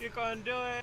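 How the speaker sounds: mock encouraging, cheering tone.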